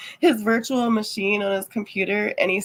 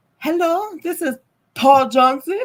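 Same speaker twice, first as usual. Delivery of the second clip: high, put-on Indian accent; 7 semitones higher, 4 dB louder than usual. Describing phone scammers introducing themselves, imitating an Indian accent. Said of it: "with their Indian accent".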